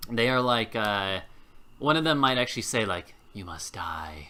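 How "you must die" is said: low, flat, dead-level monotone drone, no inflection. Narrating a game, speaker voices one of two foes facing the players, very monotone voice. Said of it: "in a very like monotone voice".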